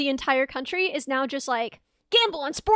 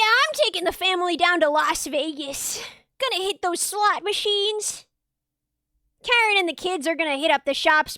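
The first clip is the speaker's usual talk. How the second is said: put-on Midwestern dad accent; 3 semitones higher than usual. Playing a father taking his family on vacation, put-on midwestern dad voice. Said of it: "I've decided to be a Midwestern father taking his children on vacation".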